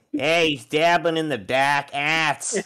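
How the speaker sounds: put-on very high, very loud, shrill Boston accent. Redoing a game scene line in a different accent: Boston accent. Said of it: "better yet, fucking Boston".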